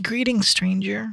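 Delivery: put-on very high, whiny, young voice with lilt. Reading aloud after being told the character is whiny and young: whiny young Telemachus voice. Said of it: "He's whiny. He's young".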